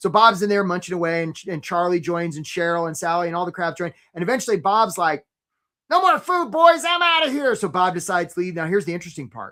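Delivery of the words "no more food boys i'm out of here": weird voice pitched very high and loud. Telling a story about crabs in a trap, voicing Bob the crab, weird voice. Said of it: "Bob has a weird voice".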